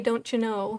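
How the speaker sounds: put-on Minnesotan-sounding accent. Quoting a great aunt in Wisconsin's frequent phrase; maybe Minnesotan accent. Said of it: "It could be Minnesotan".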